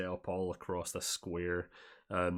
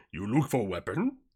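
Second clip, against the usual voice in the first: loud put-on hulking mutant monster voice; 3 semitones higher, 7 dB louder than usual. Speaker tries hard to do a super mutant voice. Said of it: "I'm trying so hard to do a super mutant voice".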